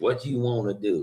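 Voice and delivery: put-on sassy, nasty attitude. Imitating a sassy girl with a nasty attitude: imitating a sassy, nasty attitude. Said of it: "that little sassy little girl that everybody sees that has the nasty attitude".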